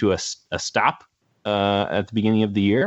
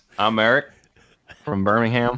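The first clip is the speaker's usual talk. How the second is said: easygoing, friendly Southern drawl, laid on thick. Doing an impression of the other speaker when asked: Eric impression with Southern drawl. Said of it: "just try to do an impression of you".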